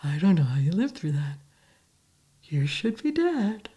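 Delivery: eerie, creepy, unsettling pleasant voice. Retelling the neighbor smiling over their shared wall after the accident, imitating smiling creepy neighbor. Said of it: "then he'd smile and he'd go".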